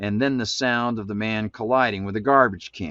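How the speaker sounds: ordinary delivery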